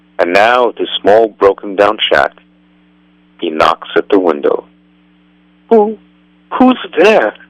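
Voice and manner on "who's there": frightened, fearful voice, much higher pitch. Narrator reading a story; a voice inside a shack answers a knock, frightened. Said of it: "Asks a frightened voice".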